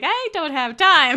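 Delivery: loud, high, slow, laughing mock exasperation.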